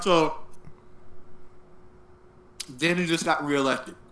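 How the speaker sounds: speaking with food in mouth. In a two-person conversation, the speaker keeps talking while eating. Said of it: "I'm sorry, I'm eating".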